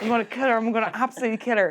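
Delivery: mock absolutely fuming, seething, furious delivery. Retelling what a player fuming after a scrum said: imitating a fuming player. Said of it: "absolutely fuming".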